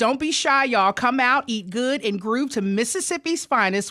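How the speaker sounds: normal talking voice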